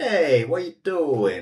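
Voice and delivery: put-on hot, angry Italian accent, loud and swooping. Joking about sounding italian when angry; mock-angry italian accent. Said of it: "I just sound like an Italian".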